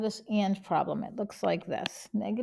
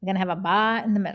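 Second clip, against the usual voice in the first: Boston accent on "bar", louder; 6 dB louder than usual. Explaining inequality graphs on a number line, boston accent. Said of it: "you're gonna hear my Boston accent".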